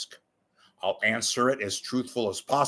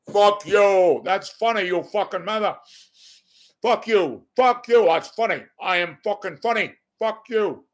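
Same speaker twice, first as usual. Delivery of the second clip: put-on very high and loud Cuban gangster accent; 10 semitones higher, 7 dB louder than usual. A comic imagines Scarface as a stand-up comedian: Scarface impression. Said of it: "What if Scarface was a stand up comedian? What would he sound like?".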